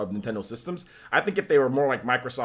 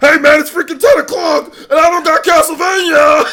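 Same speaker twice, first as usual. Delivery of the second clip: high, shrill, loud, whiny complaining tone; 16 dB louder than usual. Retelling how a retro gaming creator complained at Konami: imitating Sean complaining. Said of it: "Is that what he sounds like?".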